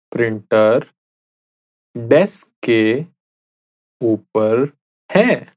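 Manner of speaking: deliberate, slow, halting, broken, word-by-word phrasing. Repeating a practice sentence for the listener to say along, slowly. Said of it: "I'll say it again slowly".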